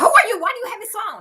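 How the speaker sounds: frantic, high, loud screaming. A mother retells screaming at a stranger who answered her son's phone, retelling her own screaming. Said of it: "I'm like screaming".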